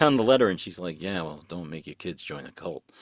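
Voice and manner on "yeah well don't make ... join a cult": put-on muttering, lower and quieter. Retelling a character's remark on a letter: muttering under her breath as Abby. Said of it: "under her breath".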